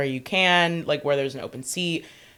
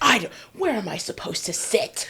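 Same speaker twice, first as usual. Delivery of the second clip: mock flustered, grumbling, high-pitched outburst; 6 semitones higher than usual. Retelling how a flustered man on a train yelled: imitating a man yelling. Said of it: "And he's just yelling".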